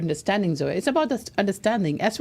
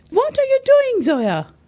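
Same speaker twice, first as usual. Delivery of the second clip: very high-pitched, shrill, loud shout; 7 dB louder than usual. Showing the other person how to shout at them: shouting. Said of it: "Shout at me".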